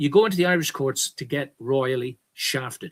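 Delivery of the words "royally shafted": royally and shafted hit hard with heavy stress. Speaking to his audience about irish courts, stress royally and shafted. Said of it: "with the emphasis on royally and the emphasis on shafted".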